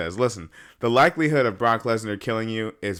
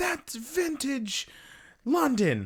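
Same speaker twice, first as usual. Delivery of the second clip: very high, swooping ringside commentator voice; 7 dB quieter than usual. Joking about what the commentator will say: Michael Cole impression. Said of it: "He's gonna be like".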